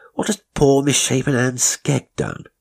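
high-pitched scoff. A man answers the narrator's stammered fears about the house, scoffing. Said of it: "he scoffed".

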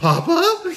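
tiny, very high little Irish voice. Retelling a movie scene where a small creature speaks: little irish accent. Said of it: "this little Irish accent of".

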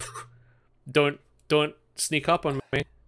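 ordinary talk, nothing marked

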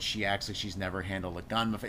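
plain

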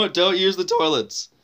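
voice breaking on the words. Speaker giving advice to listeners, voice cracking. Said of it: "So my voice cracked".

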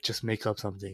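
quiet whispered voice. Retelling the pastor's answer to the girl: imitating a whisper. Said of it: "the pastor whispered to her".

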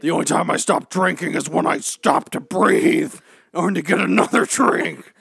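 gruff, loud, rough growling voice. Retelling a movie scene, the speaker plays the mother answering her daughter: gruff Lori voice. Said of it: "She's a gruff biatch".

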